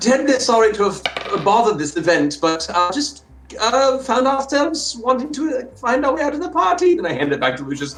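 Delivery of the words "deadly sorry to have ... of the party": very high-pitched put-on character voice. Answer a question about who you are by doing a really good Lucius impression. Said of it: "I then do a really, really good impression".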